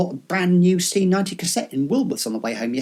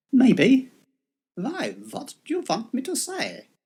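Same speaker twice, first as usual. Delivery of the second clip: put-on vampiric German accent with raised pitch; 7 semitones higher than usual. Asked to try a German accent, answering in a Count Dracula German accent. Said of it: "I didn't envisage him sounding like Count Dracula".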